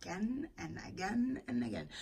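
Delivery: soft, whispered aside.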